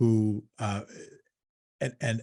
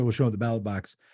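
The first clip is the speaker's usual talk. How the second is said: ordinary delivery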